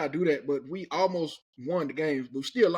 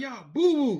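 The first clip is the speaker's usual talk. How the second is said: loud, high-pitched hollering yell; 8 semitones higher than usual. Retelling how boys walking to breakfast taunted the team: imitating boys yelling. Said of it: "Them boys yelling at me".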